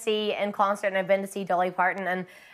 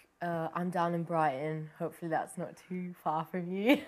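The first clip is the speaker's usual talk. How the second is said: soft, slow put-on Brighton accent; 3 semitones lower, 8 dB quieter than usual. The speaker says where they are, in a put-on brighton accent. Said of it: "That was just my good Brighton accent".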